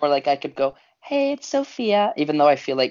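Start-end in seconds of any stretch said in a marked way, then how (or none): 1.0-2.1 put-on falsetto, very high. Speaker shows how they could introduce themselves, in a falsetto. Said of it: "putting on that falsetto".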